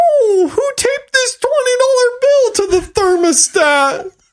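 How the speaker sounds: squeaky, very high, defensive dad voice. Describing how their dad always sounds, imitating dad's high defensive voice. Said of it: "that's what dad's voice sounds like all the time".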